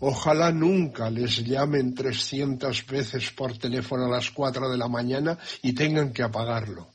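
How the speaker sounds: ordinary talk, nothing marked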